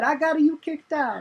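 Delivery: high, slow, smug gloating tone.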